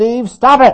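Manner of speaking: loud, high-pitched hollering. Retelling how a sister accused him at the sink: imitating a sister hollering. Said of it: "she just hollered out".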